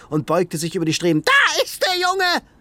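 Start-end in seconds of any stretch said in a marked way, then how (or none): 1.2-2.4 very high-pitched, screeching shriek. Tara Snow rushes to the railing and leans over it: shrieking. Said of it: "Kreischte sie".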